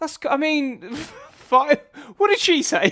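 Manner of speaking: high, loud, flustered delivery.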